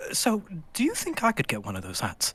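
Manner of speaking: hushed, high, leaning-in whisper. Leaning in to ask another character for a hat: whispering in character. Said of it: "lean in and whisper to Zeke".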